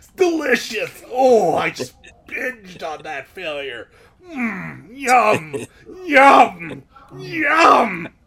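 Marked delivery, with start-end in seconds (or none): 1.1-8.0 rough wrestler-style voice. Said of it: "You sound like Hulk Hogan".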